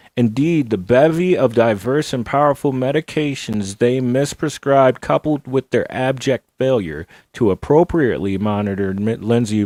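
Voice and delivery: plain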